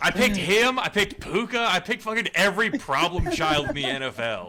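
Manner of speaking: full-on high, loud yelling. Ranting about the players they picked until told to stop, yelling. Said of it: "Stop yelling".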